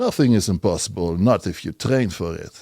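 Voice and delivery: light put-on Russian accent. Actor giving an example of one of Zangief's lines: Zangief's Russian accent. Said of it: "I have the Russian accent".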